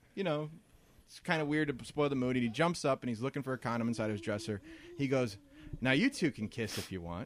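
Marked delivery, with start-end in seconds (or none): 5.8-7.3 slyly delivered, sing-song. Retelling what a guy said to two girls, imitating a sly come-on. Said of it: "he says it all slyly".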